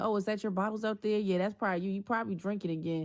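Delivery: mocking, taunting, accusing jabs. Retelling being accused over bottles outside: imitating an accusing taunt. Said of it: "he used to always accuse me".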